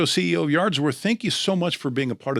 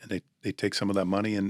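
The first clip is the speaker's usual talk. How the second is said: ordinary talk, nothing marked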